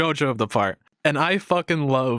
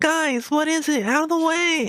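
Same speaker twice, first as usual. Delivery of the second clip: put-on very high, whiny five-year-old voice; 14 semitones higher than usual. Discussing a JoJo character, the speaker imitates him as a whiny five-year-old. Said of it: "imagine like a five year old's voice".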